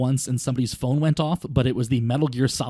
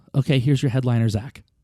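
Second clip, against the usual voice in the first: acted-out mock whisper. Retelling a show, quote the organizer introducing you at the microphone, retelling a whisper. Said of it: "she whispers".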